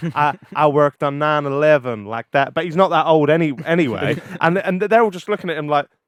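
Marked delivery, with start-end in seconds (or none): 0.2-2.5 slow, put-on American accent. Retelling a Beta Squad video where a man poses as a cop, fake American accent. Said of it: "he puts on this American accent".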